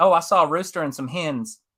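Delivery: Southern US accent, no eh sound. Explaining the key to doing a Southern accent with a sample sentence: Southern US accent. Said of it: "what's the key to doing a southern accent? ... So you say".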